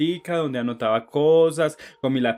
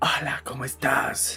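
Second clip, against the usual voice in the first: mock creepy old man voice, quieter; 4 dB quieter than usual. Retelling how a stranger greeted the speaker: imitating a nasty old man's voice. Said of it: "imagínense la voz de Viola más hijueputa que hay".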